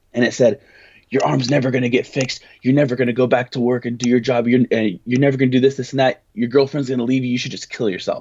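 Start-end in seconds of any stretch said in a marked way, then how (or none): 1.1-8.2 put-on quick, aggressive voice. Retelling what a threatening voice said: imitating a quick aggressive voice. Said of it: "it was quick, and it was aggressive".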